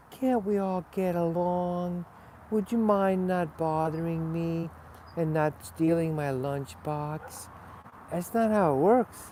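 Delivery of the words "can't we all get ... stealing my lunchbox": put-on mocking voice, high-pitched and squeaky. Acting out a bully mocking someone's polite plea: mocking high-pitched voice. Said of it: "with your high-pitched voice".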